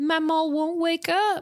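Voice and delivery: accidental, slow, high Southern drawl. Acting out a child's line while recapping a show: accidental southern accent. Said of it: "I don't know why I went southern there".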